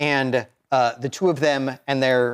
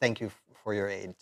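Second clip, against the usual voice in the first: very quiet, much quieter; 4 semitones lower, 11 dB quieter than usual. She bows to you again and thanks you, very quiet. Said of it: "she says very quietly".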